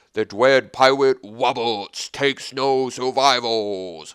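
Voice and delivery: weird, loud, booming giant bellow. Reading card flavor text aloud, in a booming giant voice. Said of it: "in the Honor of the Giant voice".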